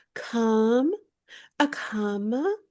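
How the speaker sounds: put-on pretentious voice. Imitating Anne Hathaway telling off the paparazzi: pretentious Anne Hathaway voice. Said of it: "she's a little pretentious".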